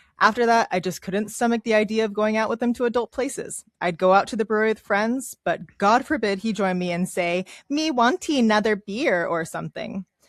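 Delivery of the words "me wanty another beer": put-on baby talk with toddler lilt. Reading a story about a husband's baby talk: imitating a toddler lilt. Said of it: "his god-awful toddler lilt accent".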